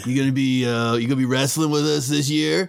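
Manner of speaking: hulking meathead orc voice, easygoing bro talk. Voicing a big orc at the wrestling club table: big meathead orc voice. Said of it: "there's a big orc".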